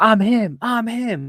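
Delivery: shrill yell at full, very loud blast. Discussing beef between Crosby and Mahomes, imitating Mahomes yelling. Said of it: "He's yelling at him".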